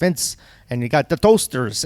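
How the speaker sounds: put-on strong Pennsylvania accent, laid on. Recalling calls to get on a guest list, the speaker is imitating Vince's Pennsylvania accent. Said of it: "he's like this strong Pennsylvania accent".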